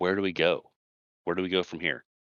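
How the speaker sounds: soft, quiet, hushed voice. Speaking to fellow travelers so as not to disturb a girl, quiet, hushed voice. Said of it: "in a quiet voice".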